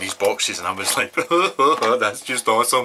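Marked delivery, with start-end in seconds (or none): 1.1-2.9 goofy, really silly put-on voice, loud. Recalling opening boxes of things they adore, in a silly put-on voice. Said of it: "it was in a really silly voice, just like that".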